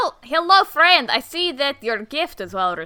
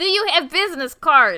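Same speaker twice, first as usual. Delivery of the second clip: comic persona voice with the articles dropped. Playing a party guest asking for a business card: Borat voice. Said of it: "one of our characters is Borat".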